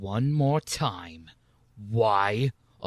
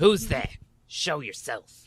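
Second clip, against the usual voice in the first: annoyed, angry, high-pitched voice; 6 semitones higher than usual. Speaker shows how they sound when being angry: angry voice. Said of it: "That's me being angry".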